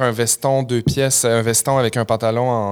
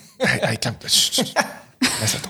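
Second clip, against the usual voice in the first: put-on hushing; 4 dB quieter than usual. Quoting what the parents often said to quiet the speaker: imitating a parent hushing. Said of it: "Une phrase que tes parents te disaient".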